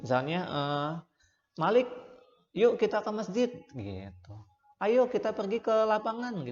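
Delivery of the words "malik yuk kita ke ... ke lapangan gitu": high, eager, spirited, enthusiastic tone. Demonstrating how to invite someone along, enthusiastic and inviting. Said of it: "Kayak semangat gitu ngajakinnya".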